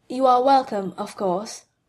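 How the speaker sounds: calm and composed. A speaker answers a humble apology, said calmly. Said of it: "Monsieur Beliveau said calmly".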